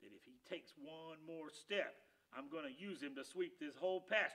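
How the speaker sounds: ordinary delivery, nothing marked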